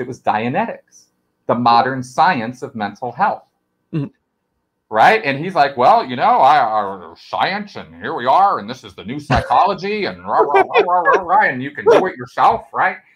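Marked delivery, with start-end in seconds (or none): 5.8-13.0 animated lecturing voice, pitch swooping up and down. Describing how Dianetics was presented, a speaker imitates him: L. Ron Hubbard impression. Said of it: "That's a pretty good impression of him".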